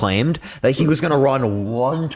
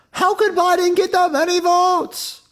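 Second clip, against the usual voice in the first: very high, slow, over-the-top hyperbolic mocking voice. Arguing with someone who claims the election was stolen, act out their argument in a hyperbolic mocking voice. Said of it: "I'm obviously using a hyperbolic voice".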